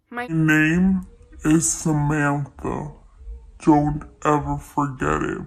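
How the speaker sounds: very low, very loud, booming inhuman ghost voice. Retelling what the girl ghost said to her up close, deep inhuman ghost voice. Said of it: "but like in a deep voice, like not a human voice".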